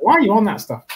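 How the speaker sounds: comic, very high, put-on Irish accent. Speaker imitating a woman who hates Facebook, funny Irish accent. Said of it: "With a funny Irish accent".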